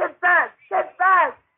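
high, loud yelling. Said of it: "It costs nothing to yell".

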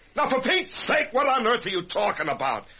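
shouting. A man shown a surprise in his office, demanding an explanation, shouting. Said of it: "Excuse me for shouting".

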